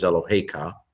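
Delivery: accent on the he syllable. Explaining where stress falls in a word form ending in ka: stress on 'he' in Eloheka. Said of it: "Notice how the accent is on the hey, not on the ka".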